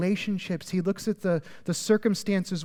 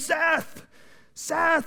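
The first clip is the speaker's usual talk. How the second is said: very high, overjoyed, ecstatic yell; 10 semitones higher than usual. Describing god calling people before him, imitating an ecstatic yell. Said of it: "He yells our name".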